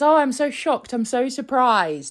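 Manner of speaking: high, put-on innocent surprise. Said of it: "he goes out and he says".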